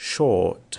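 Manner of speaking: slow, loud British "short" with the R dropped.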